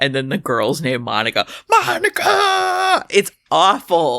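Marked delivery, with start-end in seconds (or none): 1.7-3.1 play-acted, very high, shrill scream. Retelling a character crashing a car: imitating a character screaming a name. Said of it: "he's screaming".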